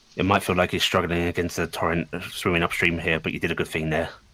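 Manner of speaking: hushed, soft voice. Handing the grapple belt to Amelia, she speaks in a hushed tone. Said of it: "she's going to just say in a hushed tone".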